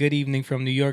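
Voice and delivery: ordinary talk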